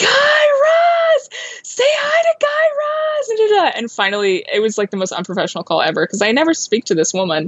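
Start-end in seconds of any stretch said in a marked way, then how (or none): 0.0-3.7 very high, slow, drawn-out screaming. Retell how your daughter lost it in the background of a call with a producer, imitating a daughter screaming. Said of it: "starts screaming".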